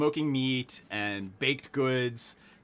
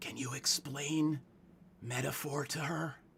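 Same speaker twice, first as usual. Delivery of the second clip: very loud stage whisper; 7 dB quieter than usual. Voicing a character who whispers a question to another, very loud, giant whisper. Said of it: "In in a very loud, giant whisper".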